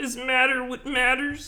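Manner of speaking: very high, quavering voice, almost weeping. Coaching another speaker on the impression: mock near-tears Jordan Peterson voice. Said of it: "You gotta be on the verge of crying".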